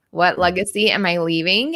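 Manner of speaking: normal talking voice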